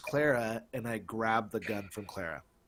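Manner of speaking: normal talking voice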